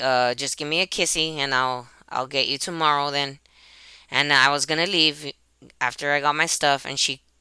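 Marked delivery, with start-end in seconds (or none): none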